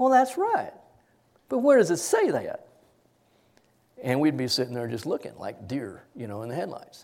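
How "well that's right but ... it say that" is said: put-on sweet, syrupy, sing-song Southern accent. Retelling a Southern woman teaching a prayer class, sweet syrupy Southern accent. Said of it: "nice, sweet, syrupy Southern accent".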